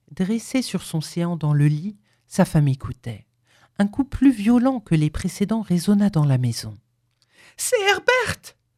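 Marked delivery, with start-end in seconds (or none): 7.6-8.5 piercing, very high-pitched shrieking scream. Reading a story, the wife cries out as a violent knock echoes: screamed.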